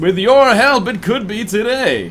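very high, loud commercial advert announcer voice. Close to hitting 150,000, the speaker asks for help in a telecom voice. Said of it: "to put on my telecom voice".

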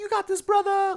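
put-on, very high, loud, sudden yelled outburst. Retelling random outbursts from a quiet crowd: imitating a crowd outburst. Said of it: "random, like, outbursts".

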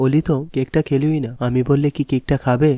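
ordinary talk

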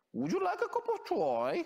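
very high, sing-song Birmingham accent. Explaining how people from birmingham talk, in a put-on birmingham accent. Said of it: "Oni tak rozprávajú".

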